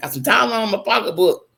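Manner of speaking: ordinary talk, nothing marked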